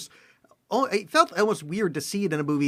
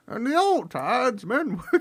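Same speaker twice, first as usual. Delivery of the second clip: put-on older British actor voice, pitched higher; 6 semitones higher than usual. Explaining an idea in a put-on voice: Anthony Hopkins voice. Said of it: "let me do it in my, in my, uh, Hopkins, uh, voice".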